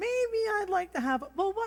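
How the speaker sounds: very high, dithering woman impression. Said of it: "that's my best Monica impersonation".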